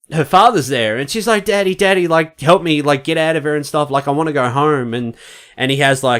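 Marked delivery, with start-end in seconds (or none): 1.4-4.9 put-on innocent, begging, pleading girl's voice. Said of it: "real innocent, like, pleading".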